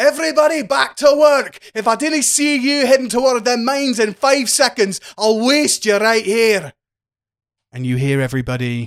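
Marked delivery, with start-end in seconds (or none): 0.0-6.7 very high, loud bellowing shout. A character shouts to the packed bar after leaving the room, shouting at a crowd. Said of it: "as he shouts to the packed bar".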